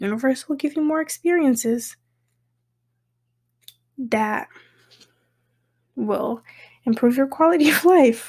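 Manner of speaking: words bubbling over with laughter while talking. Speaker giving advice while doing their nails, laughing while talking. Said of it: "I'm laughing because I'm getting distracted".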